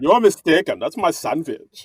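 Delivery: put-on Russian German accent. Speaker retelling a woman's sandwich dispute, in Anna Delvey's Russian German accent. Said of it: "she puts on the Russian German accent".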